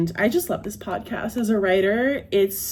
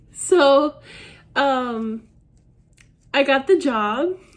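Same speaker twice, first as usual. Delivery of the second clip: very slow and high, fighting back tears; 5 semitones higher, 3 dB louder than usual. Announcing getting the job after a year of rejections, holding back tears. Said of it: "I am not going to cry".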